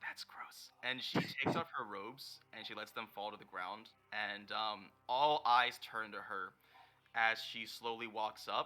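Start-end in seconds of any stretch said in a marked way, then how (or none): 0.0-0.7 very hushed, breathy whisper under the breath. Voicing Emmy answering a remark about peeing: whispering. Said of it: "Emmy whispers".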